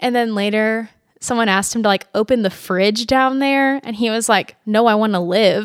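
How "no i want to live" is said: put-on Southern accent. Retelling how a ghost hunter refused to open the fridge: imitating a Southern accent. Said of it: "but in his Southern accent".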